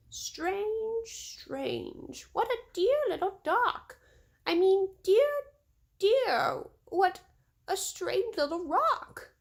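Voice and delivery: tiny, squeaky, very high, slow mouse voice. Narrator reading what a mouse says to his sleeping father, funny little mouse voice. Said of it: "a funny little voice saying".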